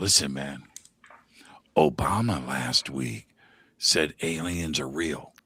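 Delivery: low whispering voice. Retelling what a guy whispered to him yesterday, retelling a whisper. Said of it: "you don't have to whisper that".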